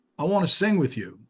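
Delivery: put-on British accent. Speaker retells a caller's words from a surprise phone call, imitating Paul's British accent. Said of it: "with a British accent".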